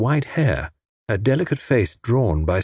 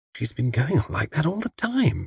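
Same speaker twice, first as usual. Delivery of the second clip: hushed half-whisper, kept soft; 4 semitones higher, 5 dB quieter than usual. Replying to a companion's murmured remark, half-whispering. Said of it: "whispered Tuppence".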